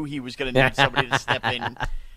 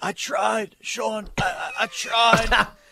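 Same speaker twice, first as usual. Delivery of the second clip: put-on sick voice, higher; 8 semitones higher than usual. Retelling a voicemail a sick caller left: imitating Pete's sick voicemail. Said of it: "I got a voicemail too".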